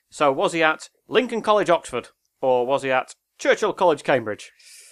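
loud quiz-show announcer voiceover voice. Asking a quiz question about university colleges: Roger Tilling impression. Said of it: "That's an impression of Roger Tilling there".

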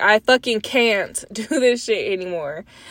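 forceful, emphatic, every word leaned on. Repeating what she just said, louder for the people in the back. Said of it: "I'm gonna say it louder".

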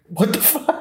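very high, freaked-out, panicked blurt. Retelling a boyfriend seeing his shaved face: imitating someone freaking out. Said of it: "freaks out".

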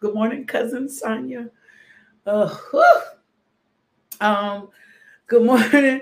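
fighting not to cry. Giving good-morning shout-outs to towns and cousin Sonia, holding back tears. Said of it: "I'm gonna try not to cry".

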